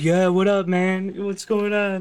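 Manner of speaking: mellow, gentle, calming big-guy voice. Imitating a voice actor's take on Barret: imitating gentle Barret voice. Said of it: "the most gentle Barret you've ever heard".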